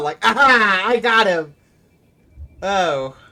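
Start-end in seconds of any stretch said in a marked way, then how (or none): 0.2-1.6 high, loud, gleeful cackling goblin voice. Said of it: "like, this big old smile".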